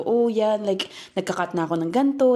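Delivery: normal talking voice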